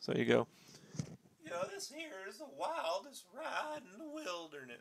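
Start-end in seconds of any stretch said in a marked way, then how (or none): 1.7-4.8 very high, very soft, cracking hillbilly voice. Showing the voice crack he could always do as a kid: cracking hillbilly voice. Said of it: "this crack in my voice. When I was a kid, it was like the hillbilly".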